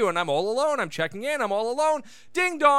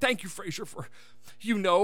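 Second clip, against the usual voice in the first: put-on choked-up voice, quieter; 2 semitones lower, 5 dB quieter than usual. Retelling a show's ending as Martin thanks Frasier: Martin getting mock choked up. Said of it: "Martin gets all choked up".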